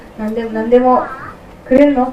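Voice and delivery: ordinary talk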